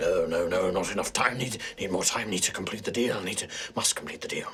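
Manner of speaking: low, hushed muttering under breath. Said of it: "and he's muttering".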